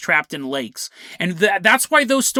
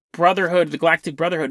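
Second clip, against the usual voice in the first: ordinary talk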